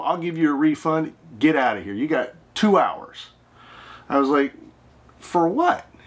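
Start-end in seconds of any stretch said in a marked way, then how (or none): 0.0-3.3 put-on male shouting voice. Retelling how a man refused to look and started yelling, retelling a yell. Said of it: "started yelling".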